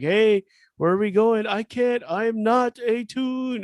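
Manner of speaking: slow, flat, lifeless delivery with zero inflection. Mocking flat movie voice acting: imitating LeBron's flat voice acting. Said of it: "it sounded so flat".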